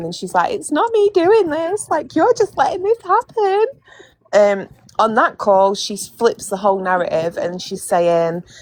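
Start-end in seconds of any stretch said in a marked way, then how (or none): 0.5-3.7 very high-pitched, put-on, tearful, crying, pleading voice. Retelling what was said on a phone call, imitating someone crying. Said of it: "she calls him back and she's crying".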